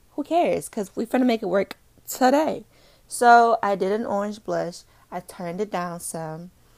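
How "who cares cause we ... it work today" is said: high, excited, hyped-up voice. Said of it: "And I said".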